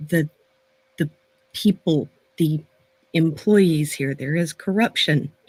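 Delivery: hushed voice. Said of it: "she's gonna kinda lower her voice".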